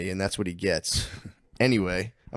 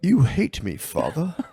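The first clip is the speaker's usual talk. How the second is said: put-on odd made-up Mid-Atlantic accent, barely British, very drawn out; 6 semitones higher, 4 dB louder than usual. Imitating an actor's strange accent from Game of Thrones: Peter Dinklage's odd accent. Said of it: "I always hated his whatever accent that was".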